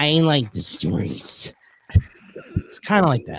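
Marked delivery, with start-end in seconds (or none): 0.0-1.5 slow, unhurried, deliberate, plain-spoken delivery. Correcting an earlier attempt to imitate a guest's words: imitating Jimmy. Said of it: "That's a great impression".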